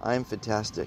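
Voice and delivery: barely audible, very quiet, depressed delivery. Retelling how a clinically depressed woman said the line: imitating a depressed woman. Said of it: "And she said it like this".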